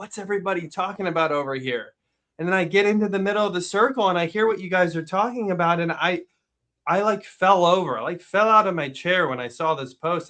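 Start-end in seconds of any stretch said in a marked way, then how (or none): 0.0-1.9 put-on excitement, much quieter. Recalling walking up to a ring of kids in the cafeteria, retelling an excited question. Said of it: "I'm all excited".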